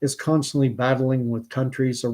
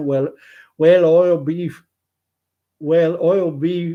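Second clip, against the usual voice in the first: put-on Newfoundland accent; 4 semitones higher, 4 dB louder than usual. Telling a joke [name] says works best in a Newfoundland accent, in that accent. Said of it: "I does a pretty good Newfie accent".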